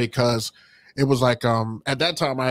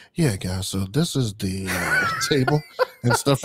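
acted-out subtle aside. Recalling talking to people at a table while others stare; acting out subtle talk. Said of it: "I'm doing like the little subtle like".

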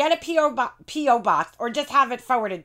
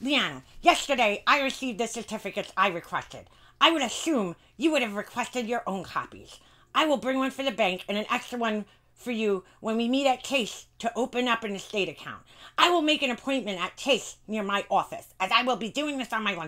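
put-on devil voice; 4 dB quieter than usual. Reading aloud an email from someone: Satan's voice. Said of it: "I should read this in Satan's voice".

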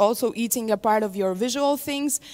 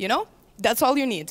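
ordinary delivery

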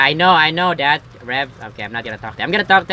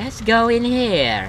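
slow voice, every word drawn out, pitched up; 8 semitones higher than usual. Playing Rev, a talking revolver, in Rev's slow talking-revolver voice. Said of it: "Why are you talking like that".

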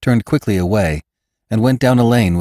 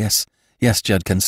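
ordinary delivery, nothing marked

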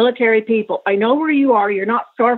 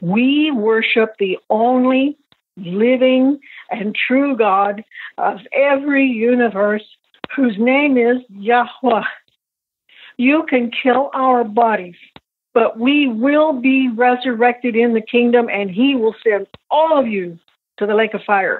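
plain

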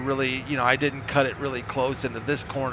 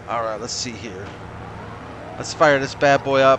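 ordinary talk

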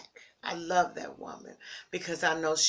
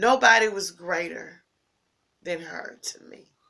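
fighting back emotion, louder; 7 dB louder than usual. Remembering a mother who is missed and looked up to: holding back emotion. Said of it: "I'm trying not to get emotional".

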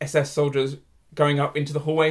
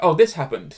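put-on German accent. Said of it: "enjoying your German accent throughout this".

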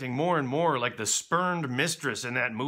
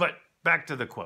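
ordinary talk

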